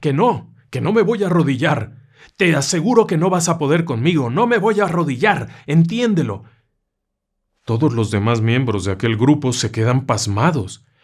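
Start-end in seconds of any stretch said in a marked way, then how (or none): 0.0-6.4 put-on nervous, tearful, high-pitched screaming. Retelling the woman refusing to kneel: retelling a woman's shout. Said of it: "Aquella mujer empieza a gritar".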